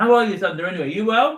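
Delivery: talking with mouth full. Greeting someone mid cake taste test; talking with mouth full. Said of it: "I've got my mouth full".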